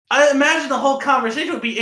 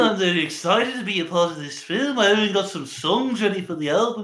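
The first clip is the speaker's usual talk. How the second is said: put-on Liverpool musician voice, lower; 4 semitones lower, 3 dB quieter than usual. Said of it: "He goes".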